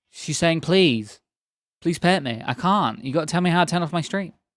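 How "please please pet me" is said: mock pleading, begging pet voice. Voicing a pet who wants pets: voicing a pet, put-on begging. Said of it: "she's literally begging me".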